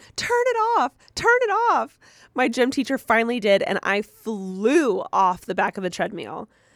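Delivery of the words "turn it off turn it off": play-acted, very high, frantic, rapid panicked shouting. Reading out a listener's story about a treadmill fall: retelling a panicked yell. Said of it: "I started yelling".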